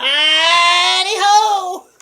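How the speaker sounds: bad, belted voice, very high and loud. Showing how the voice breaks through: bad Mister Hankey voice. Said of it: "It's not a good Mister Hanky".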